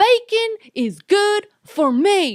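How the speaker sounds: put-on very high, loud, drawn-out, furious kid voice. Retelling a boy's reaction on a TV show: imitating pissed-off Bacon Boy. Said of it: "he gets all pissed off".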